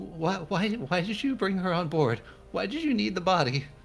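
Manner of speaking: very high, teary blubbering sob. Voicing Nolly, who is in distress, blubbering a little. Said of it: "she's blubbering a little".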